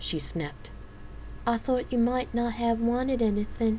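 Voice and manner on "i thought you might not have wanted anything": high, sorry-sounding, apologetic delivery. Narrator reading Mel's answer after Janice snaps, apologetic. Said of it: "Mel said apologetically".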